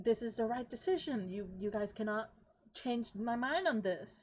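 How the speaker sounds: worked-up, riled, increasingly agitated and heated voice. Retelling what Viren says to the arguing group, acting out agitated Viren. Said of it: "Viren start to be very more and more agitated".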